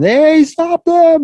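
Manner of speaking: acted, very high, loud, high-pitched screaming shout. Retelling a robbery as the store owner chases the thieves: imitating Brian screaming and yelling. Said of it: "he's screaming and yelling".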